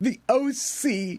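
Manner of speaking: angsty delivery. Reading out celebrity birthdays, saying a show's name: said with angst. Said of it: "I'm trying to say it with angst".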